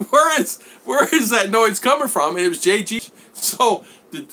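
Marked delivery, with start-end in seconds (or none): 0.1-2.4 high put-on voice broken up by laughter. Retelling what two laughing ladies asked, imitating someone laughing while asking. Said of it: "Then they started laughing, and they go".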